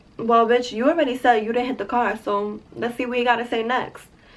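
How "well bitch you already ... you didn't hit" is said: plain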